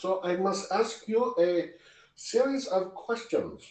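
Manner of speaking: attempted, put-on German accent, spoken very slowly. Asking a series of questions in character, attempting a German accent. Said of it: "I was trying to sound German".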